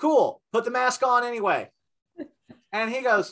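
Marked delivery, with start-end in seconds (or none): 0.0-1.7 mock, pitched-up, hollered yelled retort. Telling a story, the speaker recounts what they shouted at a man: retelling a yell. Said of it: "And I just yelled out".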